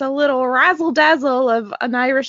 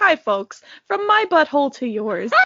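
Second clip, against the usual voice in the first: put-on leprechaun voice like a commercial spokesman. Riffing with others about a leprechaun strolling into a commercial: leprechaun commercial voice. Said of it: "The leprechaun strolls in for the commercial".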